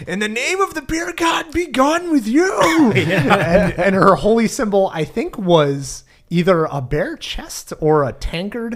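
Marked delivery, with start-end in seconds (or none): 0.1-2.9 very high, shrill, rising yell. Recounting what a player's cleric yelled during a tabletop game, retelling an in-character yell. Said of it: "I yell".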